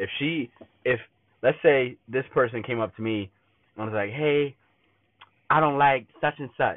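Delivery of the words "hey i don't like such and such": high-pitched put-on girly voice. Imagining a person coming up to complain, the speaker quotes her in a girl voice. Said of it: "that's my girl voice".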